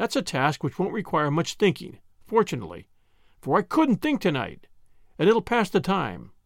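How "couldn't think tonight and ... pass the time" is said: ordinary delivery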